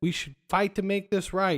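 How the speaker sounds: ordinary delivery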